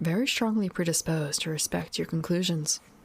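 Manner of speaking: ordinary delivery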